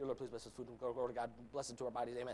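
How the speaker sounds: rattled off very fast, rushed, with no breaths. Showing how they say grace before food, teased by family: mock-rushed prayer, no breath. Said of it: "I say everything with no breath".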